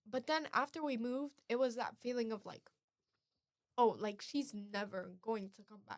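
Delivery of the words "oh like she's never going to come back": ordinary delivery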